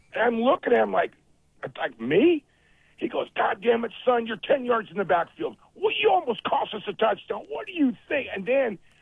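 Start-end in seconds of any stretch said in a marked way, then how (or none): 3.4-8.3 angry, swooping, profane yelling. Retelling a man cussing at him as he ran off the field, retelling a yell. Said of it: "he starts just cussing at me".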